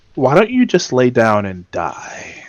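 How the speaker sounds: gentle, soft, hushed whisper. In the game, the player's character turns to him: gentle whisper. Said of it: "I'm just gonna whisper gently".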